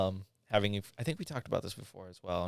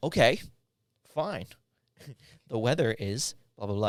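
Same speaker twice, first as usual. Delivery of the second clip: loud, grudging, sarcastic voice-assistant tone; 4 semitones higher, 6 dB louder than usual. Imagining a voice assistant that answers a rude question: sarcastic Siri voice.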